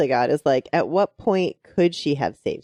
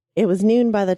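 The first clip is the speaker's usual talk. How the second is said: choked-up, breaking voice catching with emotion; 4 semitones higher, 3 dB louder than usual. Reading a story passage aloud, getting choked up. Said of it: "I'm already getting choked up".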